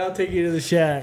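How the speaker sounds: normal talking voice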